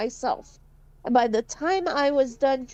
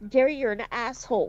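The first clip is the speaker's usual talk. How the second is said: imitated muttering under the breath. Recalling what the speaker's mom used to say about gary, imitating muttering under breath. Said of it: "say all the time under her breath".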